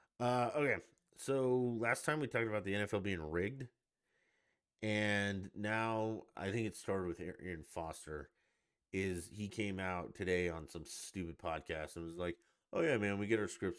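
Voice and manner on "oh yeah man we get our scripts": mocking, tongue-in-cheek, not-meaning-it sarcastic quip. Retelling a former player's podcast remark: imitating a sarcastic remark. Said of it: "he sarcastically said it was scripted".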